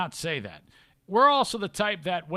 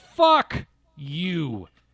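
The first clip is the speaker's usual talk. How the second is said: blunt, hard, hard-hitting, forceful delivery; 4 dB louder than usual. Ending a rant at people who are freaking out, with a hard fuck you. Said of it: "that's a hard fuck you".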